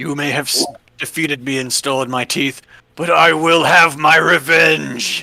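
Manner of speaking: loud, booming villain dragon voice. After the players try persuasion, the speaker answers as Nimra in a booming voice. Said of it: "the booming voice is".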